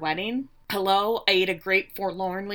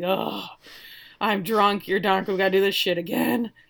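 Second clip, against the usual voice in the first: mock theatrical, exasperated sigh through the words; 5 dB quieter than usual. Recapping a scene where he answers her whispered question, retelling a dramatic sigh. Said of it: "she just kind of whispers".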